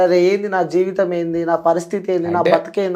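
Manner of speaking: ordinary talk, nothing marked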